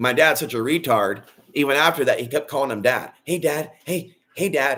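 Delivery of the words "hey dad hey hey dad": super, over-the-top feminized mocking voice. Speaker mocks a man who kept calling another man dad: imitating a super feminized voice. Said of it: "In like a super feminized voice".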